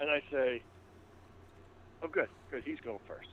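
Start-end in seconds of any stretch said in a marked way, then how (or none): 2.0-3.3 whispered aside, very quiet and barely audible. A player in a game whispers his character's line to another character, whispering. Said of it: "And then I whisper at uh".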